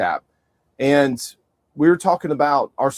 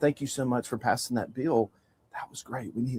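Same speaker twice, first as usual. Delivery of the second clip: very hushed, barely-there half-whisper; 11 dB quieter than usual. Retelling what a lady half-whispered to him after church: imitating a half-whisper. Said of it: "whispered in my ear".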